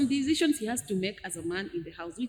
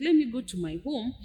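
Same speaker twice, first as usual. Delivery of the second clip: ordinary talk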